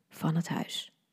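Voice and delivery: spoken softly. Reading a story, a man brings her a cappuccino she didn't order, said softly. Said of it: "zei zacht".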